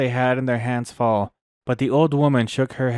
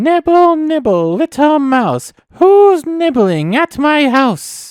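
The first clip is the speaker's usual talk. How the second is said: piercing, shrill, very high and very loud; 8 dB louder than usual. Reading Hansel and Gretel, a voice calls from inside at the nibbling children: shrill voice. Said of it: "a shrill voice called out".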